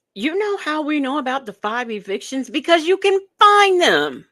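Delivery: very high, hard, full-on shouting. Addressing the audience about someone's claims, yelling. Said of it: "Sorry for yelling".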